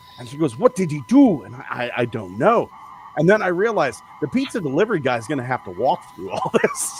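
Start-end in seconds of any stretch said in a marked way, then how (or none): 0.6-1.5 put-on accent from the Bahamas. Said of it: "You got to sneak that accent in there".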